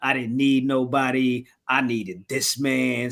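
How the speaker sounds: usual speaking voice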